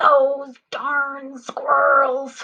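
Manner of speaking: very loud, high-pitched, angry outburst. Reading a book title aloud to listeners in different voices, angry voice. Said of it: "Let's start with an angry voice".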